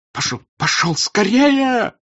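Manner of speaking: very high, trembling, quavering shout. Narrator reading Count Rostopchin calling to his coachman, shouting in a trembling voice. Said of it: "крикнул он на кучера дрожащим голосом".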